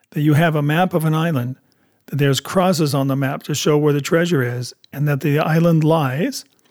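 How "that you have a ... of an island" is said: plain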